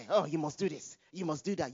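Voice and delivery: ordinary talk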